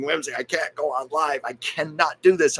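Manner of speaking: acted pleading. Retelling begging a friend not to make them go live: imitating own past pleading. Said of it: "I was begging, pleading".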